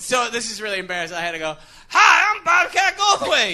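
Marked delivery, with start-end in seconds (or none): 1.9-3.6 very high, shrill, loud put-on voice. Recounting having to introduce himself in his signature voice: signature put-on voice. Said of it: "You have to do the Bobcat voice?".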